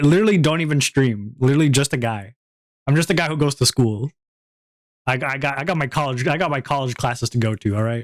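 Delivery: normal talking voice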